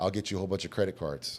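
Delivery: ordinary delivery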